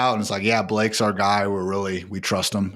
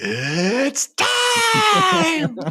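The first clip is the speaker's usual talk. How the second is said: pitch swoops up high, time stretched out; 4 dB louder than usual. Joking about Bruce Buffer at dinner with his wife, a Bruce Buffer impression. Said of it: "Bruce Buffer's like".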